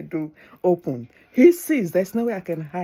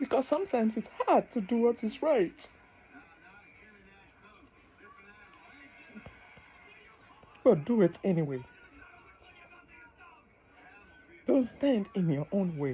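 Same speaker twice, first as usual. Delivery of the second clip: soft, tearful voice, crying through the words; 4 semitones higher, 6 dB quieter than usual. Speaking to listeners right after saying they're crying, crying. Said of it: "I don't know why I'm crying".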